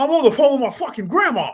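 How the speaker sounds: play-acted sharp, very high, loud irritated snap. Retelling how a man on the payphone snapped at the man behind him: retelling an angry snap. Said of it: "he just snaps at him like".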